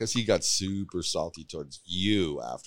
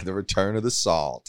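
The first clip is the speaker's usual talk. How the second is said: ordinary talk, nothing marked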